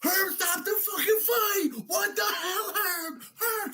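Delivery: put-on shrill, drawn-out, stretched-out yelling. Retelling how the other speaker yelled while watching a fight live: imitating someone yelling. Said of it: "when you yelled at her".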